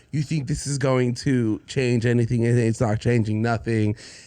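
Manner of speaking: ordinary talk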